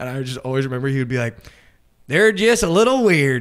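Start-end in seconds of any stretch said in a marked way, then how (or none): 2.1-3.4 put-on very loud, heavy, thick West Virginia accent. Retelling what a roommate from west virginia always said: imitating roommate's thick west virginia accent. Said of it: "He had, like, the thickest accent".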